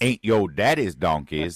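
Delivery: put-on Detroit accent. Mocking how a politician talks in Detroit, put-on Kamala Harris accent. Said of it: "I say it in the new accent of Kamala, Kamala Harris. ... That's how she talks when she's in Detroit".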